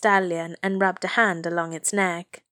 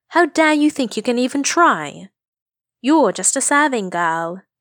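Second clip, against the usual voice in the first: loud, high-pitched, contemptuous, scornful tone; 5 semitones higher, 5 dB louder than usual. Another girl speaks to a girl she calls a serving girl, scornfully. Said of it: "said another scornfully".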